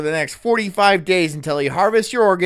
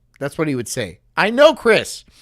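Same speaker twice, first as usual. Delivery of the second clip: ordinary talk, nothing marked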